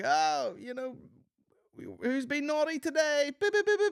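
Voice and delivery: elf character voice, pitched way up. Retelling a performer's Christmas elf act: imitating a man playing an elf. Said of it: "guy's in character".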